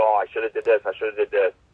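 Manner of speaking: normal talking voice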